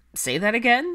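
playful teasing. He answers the witch in his arms after her muffled words, teasing. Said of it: "he teased".

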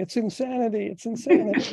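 mock, very high-pitched screaming outburst. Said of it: "hearing Stuart screaming".

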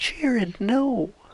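very high-pitched, squeaky, put-on comic voice. Imitating a player's high-pitched yell: imitating his high-pitched voice. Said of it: "he does that high-pitched voice".

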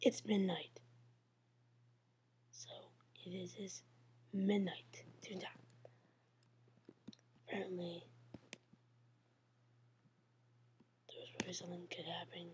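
hushed, soft, low voice. Streaming at midnight while people sleep in the house, talking low. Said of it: "Sorry I'm talking low".

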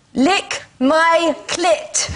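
German-accented delivery. Told to give the phrase a whirl, the speaker tries a german accent. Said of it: "Let's see if I can do it with a German accent".

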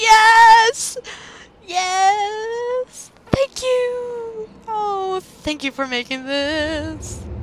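overjoyed, delighted, high and loud squealing voice.

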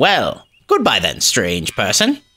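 haughty, lordly, imperious, swooping tone. A character refusing a stranger's request and dismissing them, imperious.

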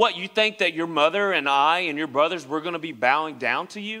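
plain

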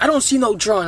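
plain

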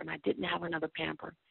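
ordinary talk

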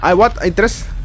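startled, alarmed yelp, high-pitched and loud.

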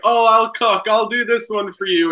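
insincere put-on helpfulness. Teasing another speaker by imitating his pretend offer to cook: imitating a fake offer to cook. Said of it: "fake thing where you're, like, loudly taking out the pots".

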